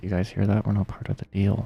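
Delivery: quiet whispering. Playing a character who whispers to the party: whispering to the party. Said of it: "whisper to the party".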